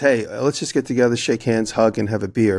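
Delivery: ordinary delivery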